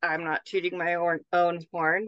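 ordinary talk, nothing marked

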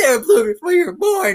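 mock shouted, swooping, animated yell. Retelling a guy who kept yelling at him outside: retelling a guy's yell. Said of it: "this guy was yelling like".

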